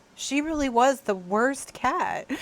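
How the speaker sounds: mock, heavily consoling, very sympathetic tone. Retelling what she said to her mom about the cat, in a mock-sympathetic tone. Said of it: "in a very sympathetic tone of voice".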